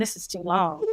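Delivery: put-on whispering voice. Retelling what the director of photography whispered at the camera: imitating Keith whispering. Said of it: "Keith is whispering".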